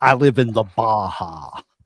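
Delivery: put-on voice, slow and measured. Doing another line as Jesse Ventura: Jesse Ventura impression. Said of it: "what's he say?".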